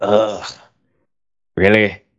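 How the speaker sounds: put-on groan under breath. Telling how his girlfriend picked a movie, he retells groaning under his breath. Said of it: "I groaned under my breath like".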